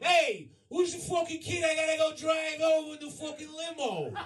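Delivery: play-acted Italian goomba voice, way up high. Retelling how the limo driver jumped out: imitating a Goomba Italian guy. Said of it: "this fucking Goomba Italian guy jumps out and goes".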